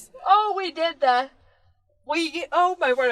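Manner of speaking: high words spoken mid-yawn. Prompted by the other speaker to describe last week's preparations, yawning. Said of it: "I'm yawning".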